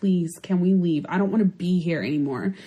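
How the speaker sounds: desperate, pleading, begging tone. Speaker retells begging her sister-in-law to leave the club, retelling pleading to leave. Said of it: "I was begging my sister-in-law".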